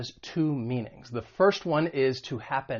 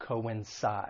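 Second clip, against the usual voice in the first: coincide with stress on third syllable, -cide; 4 semitones lower, 7 dB quieter than usual. Pronunciation lesson on the three-syllable verb: stress on -cide in coincide. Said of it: "The stress is on that third syllable".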